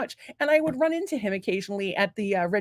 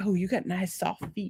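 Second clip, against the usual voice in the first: put-on deep male voice, much quieter; 5 dB quieter than usual. Retelling a man's compliment to the speaker, imitating his deep voice. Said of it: "He had a deep speaking voice".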